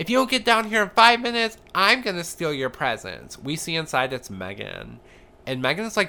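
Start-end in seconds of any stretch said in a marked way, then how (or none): 0.0-3.4 very high, shrill, loud, furious voice. Retelling how Kelly pounded on the next door, acting out a furious threat. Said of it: "is pounding furiously".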